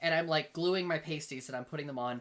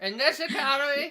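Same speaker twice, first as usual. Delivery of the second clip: drunk elderly put-on voice, higher and louder; 9 semitones higher, 5 dB louder than usual. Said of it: "eighty and drunk".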